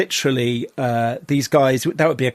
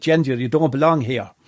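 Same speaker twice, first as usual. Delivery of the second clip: put-on Tipperary Irish accent. Retelling what an Irish gang member from Tipperary said to the speaker; Tipperary Irish accent. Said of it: "Tipperary accent was more like".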